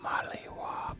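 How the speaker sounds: soft whisper. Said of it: "I'm terrible at the whisper".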